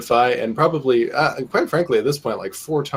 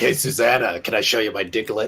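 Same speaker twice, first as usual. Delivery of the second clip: super creepy, skin-crawling voice. Quoting what a guy said to a woman: imitating a creepy voice. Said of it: "Your creepy voice is super creepy".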